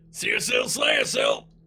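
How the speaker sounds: loud, fierce yelled war cry. Voicing a charging warrior with a glowing hammer: yelled battle cry. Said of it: "he just yells out".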